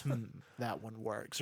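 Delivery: mock dead-serious, sober, really serious tone. Imitating the show's Joker voice with a really serious voice. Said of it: "A really serious, a really serious".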